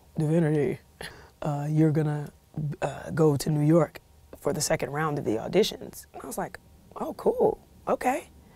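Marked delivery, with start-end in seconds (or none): 0.2-6.1 put-on deep voice, lower. Retelling a phone call after midnight, imitating the caller's deep voice. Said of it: "this deep voice on the phone".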